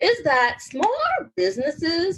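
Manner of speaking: cracking, breaking voice. Speaker explaining a point to listeners when their voice cracks. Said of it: "my voice cracked".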